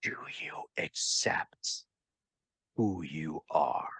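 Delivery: very quiet whispered demon voice. Narrator voicing a demonic voice whispering in the listener's ear, demonic whisper. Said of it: "this demonic voice just whispers in your ear".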